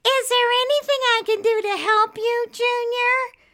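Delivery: very high, drawn-out, taunting mock little-girl voice. Junior mocks a question put to him; mocking little girl's voice. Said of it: "Junior mocked in a little girl's voice".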